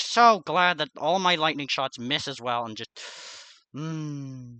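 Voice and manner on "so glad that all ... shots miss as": worn-out, weary, annoyed tone. Speaker, fighting an opponent in a game, tired and irritated. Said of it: "my extremely tired and irritated voice".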